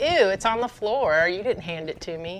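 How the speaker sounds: put-on fussy, picky, spoiled dog voice. Voicing a picky dog refusing food from the floor: voicing a picky spoiled dog. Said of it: "He's like".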